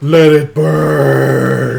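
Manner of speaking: big, booming, rough, intimidating voice, "burn" drawn out. Holding axes up, looming over the fire captain, in a booming voice. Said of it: "in a booming voice".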